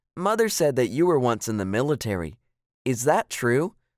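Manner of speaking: plain reading voice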